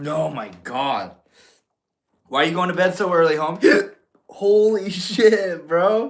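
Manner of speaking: speech broken by hiccups. After inhaling water, a speaker asks someone why they're going to bed early, talking through hiccups. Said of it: "Now I got the hiccups".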